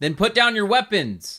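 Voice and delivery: shrill, very high, very loud, commanding shout. Narrator voices someone unseen calling back to the group: very loud voice. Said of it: "call back in a very loud voice".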